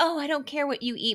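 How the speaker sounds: mock, high, patronizing, judgmental, condescending tone. Quoting a woman who gives unsolicited advice, in a mock-condescending tone. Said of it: "a condescending tone".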